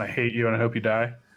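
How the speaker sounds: flat, harsh, deadpan monotone. Acting out the mockery cast at Spider-Man, flat monotone delivery. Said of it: "in a very monotone voice".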